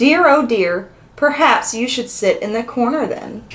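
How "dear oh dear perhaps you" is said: ordinary delivery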